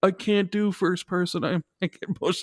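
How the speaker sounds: put-on whiny griping. Retelling what people said about first-person games: imitating people complaining. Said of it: "suddenly it was like".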